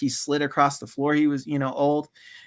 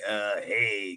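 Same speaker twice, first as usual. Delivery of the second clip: put-on old man voice, lower and quieter; 6 semitones lower, 8 dB quieter than usual. Retelling how Stu Hart approached bodybuilders at gyms: imitating Stu Hart's way of talking. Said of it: "'cause he talked like that".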